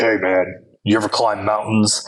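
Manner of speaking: put-on big brute voice. Retelling how a huge man came up and asked him something: Hulk voice. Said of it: "here's this Hulk voice like".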